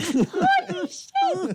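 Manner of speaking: very high, pained, hurt, shocked cry. Another try at imitating someone's reaction for the co-hosts, retelling a pained shout. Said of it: "Like your nuts got kicked in".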